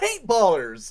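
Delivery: fruity shout, as high and loud as possible. Proposing a better name for the game's players, said as fruity as possible. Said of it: "as fruity as possible".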